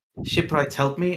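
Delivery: private murmur, spoken half to herself. Voicing a character casting a spell: murmured under her breath. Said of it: "under her breath, just murmurs".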